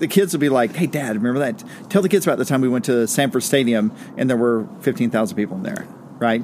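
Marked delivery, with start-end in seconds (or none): none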